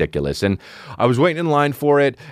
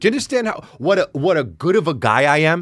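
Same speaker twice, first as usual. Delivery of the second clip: put-on Persian accent; 5 semitones higher than usual. Show host talking to listeners about Christmas, Persian accent. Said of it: "Said that so Persian".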